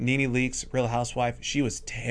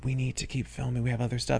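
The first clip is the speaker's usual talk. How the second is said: ordinary talk, nothing marked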